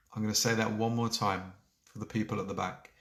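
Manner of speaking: normal talking voice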